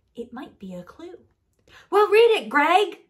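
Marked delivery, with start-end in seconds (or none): 1.9-2.9 very loud, high-pitched shouting. Urging another to read a note found by the register: yelling. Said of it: "you don't have to yell".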